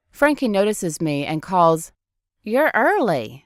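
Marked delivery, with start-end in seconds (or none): 2.5-3.3 sweet, cute, high-pitched southern twang. Narrating a story, Frankie notices the narrator and calls out in a cute southern twang. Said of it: "in a cute southern twang".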